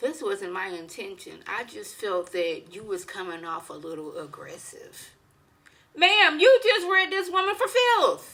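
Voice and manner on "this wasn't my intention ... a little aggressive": serene, unbothered, very calm, soft voice. Retelling what Angela said after all that, imitating Angela's very calm voice. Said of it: "in the most calm voice".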